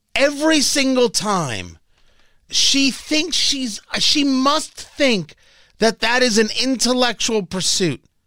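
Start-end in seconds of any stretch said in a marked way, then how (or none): none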